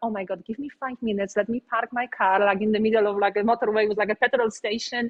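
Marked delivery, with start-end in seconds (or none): none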